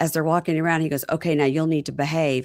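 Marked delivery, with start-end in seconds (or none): none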